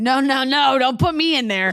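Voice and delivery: slow, defensive, protesting tone. Retelling how the other speaker refused to be labeled: imitating someone protesting. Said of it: "You were like".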